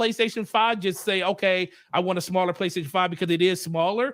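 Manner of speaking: usual speaking voice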